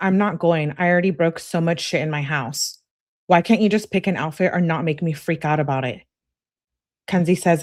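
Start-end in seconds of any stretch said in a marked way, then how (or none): none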